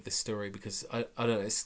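plain reading voice

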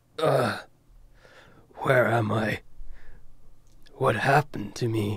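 fake rough masculine voice. A child character speaks to Magnus, his son, in a gruff manly voice. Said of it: "in his gruff, manly voice".

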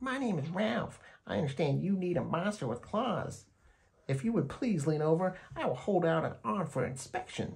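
very high, silky voice. The second monster under the bed introduces himself: Ralph's high, silky voice. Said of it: "I believe professional monsters should always be well groomed. ... he said in a high, silky voice".

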